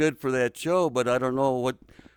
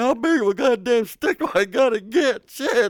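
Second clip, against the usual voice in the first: high, pained crying voice, sobbing; 10 semitones higher, 6 dB louder than usual. Retelling being punished with a stick, imitating crying in pain. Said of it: "I was crying in pain the whole time".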